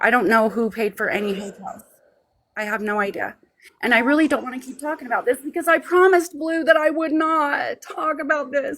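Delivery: near tears, holding back crying. Refusing to keep answering questions about a promise, on the verge of tears. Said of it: "don't start crying".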